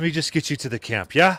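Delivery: winded, gasping between words. A character holding his side offers to lead the group to camp: out of breath. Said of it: "Sorry, out of breath".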